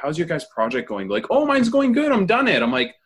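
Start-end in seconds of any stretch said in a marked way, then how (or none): 0.0-1.1 hesitant, insecure, self-doubting tone. Speaker retells asking classmates about their projects, feigning insecurity. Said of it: "I like really built up that I was like insecure".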